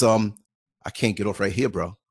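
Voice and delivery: put-on flat-out insistence, low and firm. Quoting a man he was watching who wouldn't get off, retelling a determined refusal. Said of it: "I heard it in his voice that he ain't getting off".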